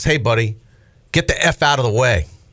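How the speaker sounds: really nasty, mean, ugly delivery. Retelling what a man said to the speaker, imitating a nasty tone. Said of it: "Like really just nasty tone".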